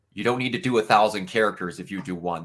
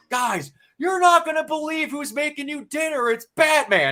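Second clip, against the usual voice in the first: shrill, very high, excited scream. Telling a story, the speaker retells a man screaming out into the mess hall. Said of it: "this guy screams out into the mess hall".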